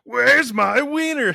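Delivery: very high, loud, hollering voice. Asked for his impression of Pee-wee, [name] does a Pee-wee impression. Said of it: "do your impression of Pee Wee".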